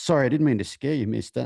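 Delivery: put-on polite, educated-sounding Southern accent. Retelling what a man said after stepping back, in a Southern, educated-sounding voice. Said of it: "he sounds southern and educated".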